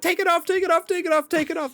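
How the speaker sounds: put-on very high, panicked, repeated pleading tone. Retelling a mother's reaction to a VR headset: imitating mom freaking out. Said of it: "she, like, freaked out".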